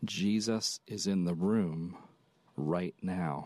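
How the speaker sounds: slow, steady, calming reassuring tone. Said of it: "Let me try to say it like he would say it".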